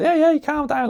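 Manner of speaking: put-on Scouse accent, very high. Retelling a video skit as a Scouser customer at the kiosk: Scouse accent. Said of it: "I can do a bit of a Scouse accent".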